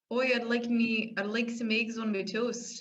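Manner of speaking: attempted Irish accent drifting into a Kiwi accent. Trying to do an irish accent more subtly, in an attempted irish accent. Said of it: "That's Kiwi".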